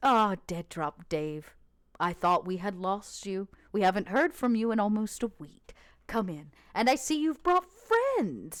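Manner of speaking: kindly, warm, welcoming voice. Voicing a clean, welcoming man greeting Dead Drop Dave: warm voice. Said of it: "in this kind of warm voice".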